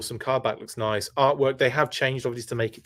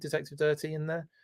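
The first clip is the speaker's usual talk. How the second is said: ordinary talk, nothing marked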